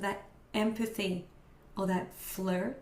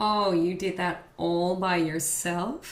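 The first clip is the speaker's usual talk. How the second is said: slow, condescending, patronizing talking-down tone; 3 dB louder than usual. Explaining how voices carry attitude, demonstrating a condescending tone. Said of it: "make the sound like you're condescending someone".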